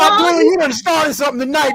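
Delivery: high, loud, laughing, teasing holler.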